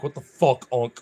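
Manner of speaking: fed-up, annoyed, griping dog voice. Speaking for two pets staring into the camera: put-on annoyed dog voice. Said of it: "looking at me like".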